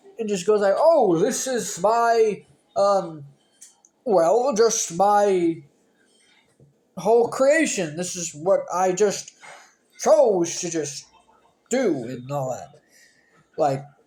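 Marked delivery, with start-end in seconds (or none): 0.8-12.1 loud, very slow, deliberate pronouncement. Retelling what Kane says when he pops up: Kane impression. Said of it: "a good impression of Kane".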